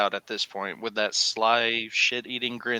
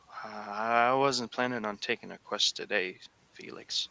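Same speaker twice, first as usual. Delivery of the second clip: much quieter, softer delivery; 4 dB quieter than usual. Retelling a blushing elephant speaking to Felix, in a quieter voice. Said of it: "in a quieter voice".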